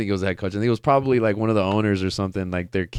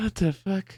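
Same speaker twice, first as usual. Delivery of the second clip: put-on distraught voice, much higher; 10 semitones higher, 6 dB quieter than usual. Retelling the coach Stefanski's reaction to the lost game, imitating distraught Stefanski. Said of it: "he was in shambles".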